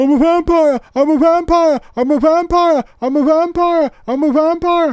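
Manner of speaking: shrill, loud film-star voice. Showing a Nicolas Cage impression from Vampire's Kiss: Nicolas Cage impression from Vampire's Kiss. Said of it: "Let me do my Nicolas Cage impression from".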